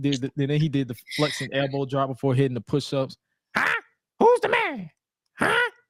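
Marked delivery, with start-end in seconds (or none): 3.5-5.7 very high, slow, squeaky voice. Retelling a wrestler flexing after a move: squeaky Scott voice. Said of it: "squeaky voice with it".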